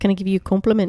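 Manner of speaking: put-on New Zealand accent. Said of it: "my New Zealand accent with quotes from the show".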